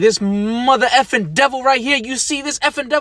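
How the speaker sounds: full-on, high-pitched shouting. Acting out showing an old lady a picture, retelling a yell. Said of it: "why are you yelling?".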